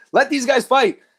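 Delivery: mock yelling, very high and loud, like a fan. Recalling watching the fight stoppage at home, speaker is retelling screaming at the TV. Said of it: "And I'm screaming at my TV".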